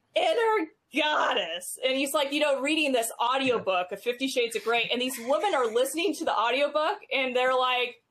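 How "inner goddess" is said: horrid voice, high and swooping. Retelling a comedy skit of an audiobook reading, imitating Gilbert Gottfried's horrid voice. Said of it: "absolutely horrid voice".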